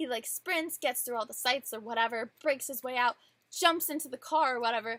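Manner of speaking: plain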